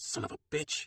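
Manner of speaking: snarling, practically a growl. Reading a story aloud, a cook swears at the chef: growling. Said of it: "Lena practically growls".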